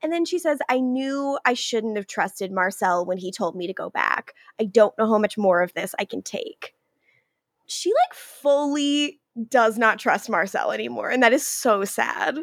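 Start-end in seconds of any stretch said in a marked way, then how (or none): none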